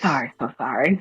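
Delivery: whispered voice. Acting a character apologizing while dragging another away by the ear: whispering.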